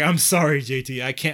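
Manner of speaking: put-on, very slow and loud, cracking up laughing. Retelling mom's reaction while watching a movie: imitating someone cracking up laughing. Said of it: "she's cracking up laughing".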